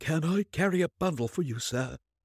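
chattering teeth. Reading a man's question to a portly lawyer, teeth chattering. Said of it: "his teeth chattering as he spoke".

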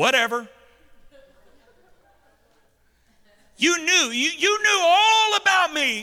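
snarky dismissive jab. Acting out the master's reply to the lazy servant: snarky. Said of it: "Then he gets a little snarky".

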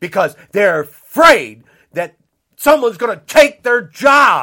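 very loud, rising, enraged, furious shout. Speaking out while marketing a book, still angry. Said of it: "I'm pissed off. I'm sorry. I'm very pissed off".

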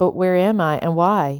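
ordinary delivery, nothing marked

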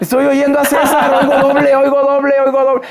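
put-on shouting. Retelling how a bedridden woman heard his voice on audio: imitating María shouting. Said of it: "Y empieza a gritar".

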